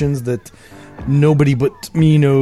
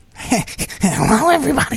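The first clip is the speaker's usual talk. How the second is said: put-on goblin voice, much higher pitch; 11 semitones higher than usual. Host greets everyone a second time, now in a goblin voice. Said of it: "the reason we're all talking like goblins".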